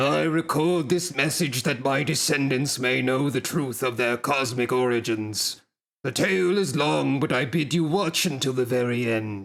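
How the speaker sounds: very deep character voice. Voicing the Godbrand recording a message to his descendants: deepest Godbrand voice. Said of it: "This is probably like the deepest voice I can do".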